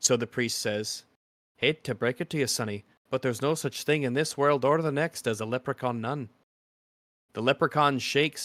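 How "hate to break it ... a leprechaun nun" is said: put-on Irish accent, put on. Reading out a joke, doing the quotes in an Irish accent. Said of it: "You gotta do it for the quotes".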